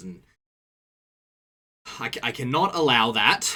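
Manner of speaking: stammering, stuttering delivery. A caretaker refuses to let his patient be taken into custody, stammering. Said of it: "he sort of stammers and stutters".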